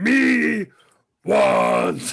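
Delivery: furry monster voice. Told their character turns into Cookie Monster, the speaker answers in Cookie Monster voice. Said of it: "You apparently turn into Cookie Monster".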